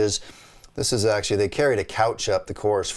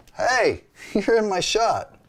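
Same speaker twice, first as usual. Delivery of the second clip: pitched-up, called-out yell; 11 semitones higher than usual. Retelling yelling at a guy who walked into the shot: retelling a yell. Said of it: "I yelled at him".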